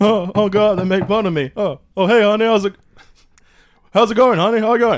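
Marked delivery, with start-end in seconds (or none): 1.5-5.0 stammering stand-up comic voice. Greeting a spouse in an improv scene: Rodney Dangerfield voice. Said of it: "Are you doing Rodney Dangerfield?".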